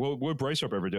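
ordinary talk

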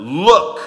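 loud, hard, forceful acted-out delivery. Retelling the story, the speaker voices the older son answering his father: mock-forceful 'Look'. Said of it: "the way the older son speaks".

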